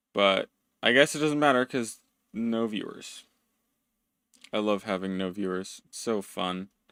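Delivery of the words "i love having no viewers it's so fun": dry sarcasm, lower and quieter. Joking about streaming with no viewers, sarcastic. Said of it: "I also love being sarcastic".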